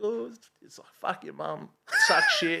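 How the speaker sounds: put-on high, swooping sobbed kid voice through tears. Retelling a caught kid reading out the graffiti: imitating a kid crying. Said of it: "he's just bawling his eyes out".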